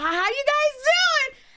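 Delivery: put-on very high, loud Valley girl voice. Showing how a valley upbringing makes them talk: high valley girl voice. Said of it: "so I'm talking like this".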